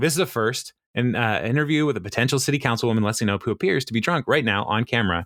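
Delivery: ordinary delivery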